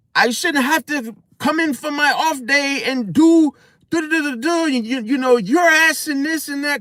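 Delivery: mock, very high-pitched, angry scolding rant. Retelling how the boss fired a worker on the spot: imitating someone cussing out a worker. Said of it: "cussing him out and stuff".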